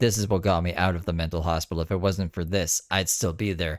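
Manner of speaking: ordinary delivery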